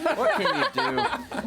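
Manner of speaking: high, slow laughing shrug.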